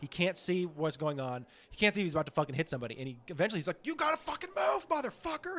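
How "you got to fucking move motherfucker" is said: very high-pitched, furious, angry shout. Describing a driver blinded by lights in a driveway, retelling an angry shout. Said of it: "And he's shouting at these people".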